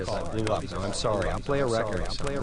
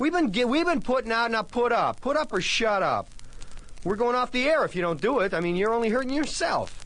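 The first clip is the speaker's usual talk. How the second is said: angry outburst, much higher-pitched; 13 semitones higher than usual. Radio host addressing listeners who are not calling in: angry outburst. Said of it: "Nobody's calling now because I blew up".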